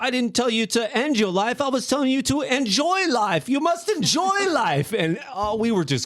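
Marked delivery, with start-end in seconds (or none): 0.0-4.9 put-on shaky British accent, much higher. Retelling a man's joke, imitating his shaky British accent. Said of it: "in his shaky British accent".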